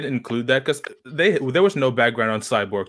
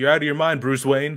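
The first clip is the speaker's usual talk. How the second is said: plain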